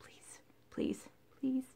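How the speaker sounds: breathy, very soft whispered pleading tone. Asking viewers for donations for doctor's appointments: begging. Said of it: "Sorry, begging".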